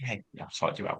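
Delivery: put-on whisper. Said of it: "She was, like, whispering".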